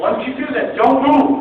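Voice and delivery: loud, high, firm barked delivery.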